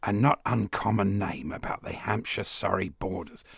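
put-on cricket commentator voice. Reading from a book about various people, in John Arlott's voice. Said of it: "John Arlott".

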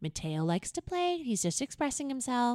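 typical neighborhood-mom talking voice. Mimicking a type of mom talking about her son Mateo. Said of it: "one of those moms that's like".

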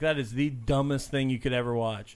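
ordinary delivery

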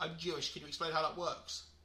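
normal talking voice

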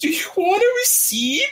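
put-on crying voice. Retelling serving a customer at the shop, imitating own crying. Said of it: "'Cause I'm like, like, crying".

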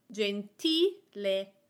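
gentile with the middle syllable ti stressed. Explaining stress on the syllable before the last: stress on ti in gentile. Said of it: "I am putting the emphasis on the syllable before the last one, ti".

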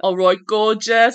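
very loud, high, bad fake Cockney accent. Discussing character accents, a co-host tries a bad cockney accent.

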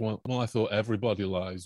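ordinary delivery

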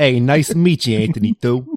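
put-on, played-up New York accent. Imagining a fictional character with a more accurate accent, in a new york accent. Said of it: "That was New York".

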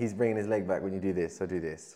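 normal talking voice

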